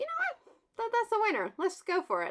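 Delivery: high-pitched excited self-talk, pitched way up. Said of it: "So I thought".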